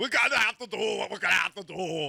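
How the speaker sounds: put-on star voice, belted out loud and high. Try out an impression while others say whom it sounds like, as an Arnold Schwarzenegger impression. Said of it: "That's Arnold".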